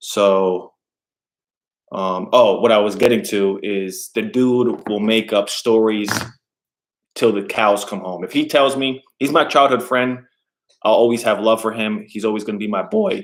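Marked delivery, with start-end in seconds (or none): 12.1-13.2 cracking, breaking voice. Talking about a childhood friend who will always be his boy, voice cracking. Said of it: "My voice just cracked".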